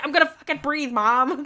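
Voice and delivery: acted furious outburst, very loud, high angry kid voice. A mother retells her son's reply when told to stop and breathe, imitating angry Wolf. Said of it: "still really angry".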